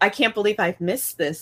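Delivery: ordinary talk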